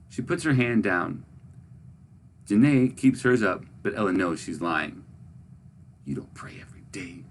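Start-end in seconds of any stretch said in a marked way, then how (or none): 6.0-7.2 sharp, hushed, hissed whisper. Narrator voicing a girl accusing another girl of lying, hissed. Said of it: "she hisses".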